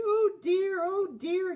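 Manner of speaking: high yawn, "dear" stretched out. Sleepy Thomas finally starts up for the express, yawning. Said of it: "he yawned".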